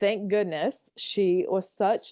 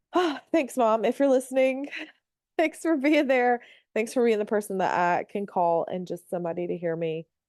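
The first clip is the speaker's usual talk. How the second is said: emotional voice on the edge of tears; 3 semitones higher than usual. The speaker addresses their mom, who may be listening: teary voice. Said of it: "that kind of makes me tear up".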